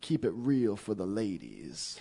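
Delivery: put-on southern American accent, not her own. Quoting a woman's message, put-on southern accent. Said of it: "You gave her a southern accent".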